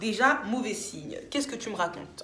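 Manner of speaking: ordinary talk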